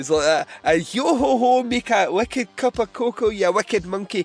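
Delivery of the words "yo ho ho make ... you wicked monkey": put-on granny voice, much higher, louder. After being told they might be Mrs. Doubtfire, the speaker does a Mrs. Doubtfire voice. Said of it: "You might actually be Mrs".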